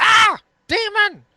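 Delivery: shrill, very high, shrieking goblin cry. Voicing goblins who shriek at the word demon: shrieking goblins. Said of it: "they look at, uh, Salvex and they go".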